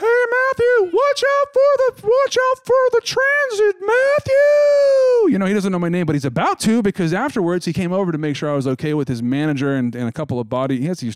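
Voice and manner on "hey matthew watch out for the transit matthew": acted-out scream, much higher, slower. Telling a story, the speaker quotes a man yelling at them, retelling a scream. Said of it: "He screams".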